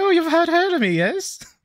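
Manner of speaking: very high-pitched, tiny little voice. Quoting a joke from the review in its little voice: little Jack Shuttlecock voice. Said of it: "just a little voice like".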